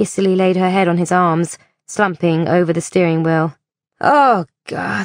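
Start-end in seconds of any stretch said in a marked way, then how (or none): 4.0-5.1 quiet moan under the breath. Narrating, a woman reacts after a man calls out offering help: moaned under her breath. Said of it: "she moaned under her breath".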